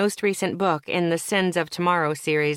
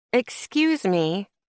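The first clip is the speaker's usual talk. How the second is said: dismissive, snide, superior, condescending tone; 2 semitones higher than usual. Reading a story aloud, a rich customer interrupts: condescending tone. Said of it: "in that condescending tone rich people reserve".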